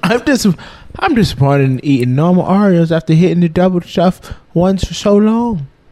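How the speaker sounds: strange, fake put-on Aussie accent. Reading a listener's message aloud in a strange put-on accent. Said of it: "The fuck accent was that?".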